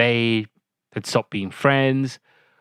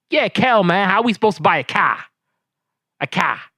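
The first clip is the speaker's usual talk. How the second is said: put-on thick, laid-on Chicago accent, pitched up; 8 semitones higher than usual. Imitating how the characters kept saying they wanted a car: imitating Kenan and Kel's thick Chicago accent. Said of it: "the accent".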